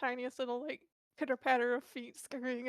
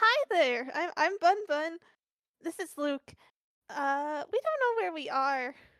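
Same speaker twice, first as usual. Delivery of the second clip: loud, eager, sing-song, swooping, unhurried enthusiasm; 3 semitones higher, 7 dB louder than usual. Player voicing Bun Bun, stepping out from behind Luke to greet someone: enthusiastic Bun Bun voice. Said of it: "The sh- sheer enthusiasm of your voice".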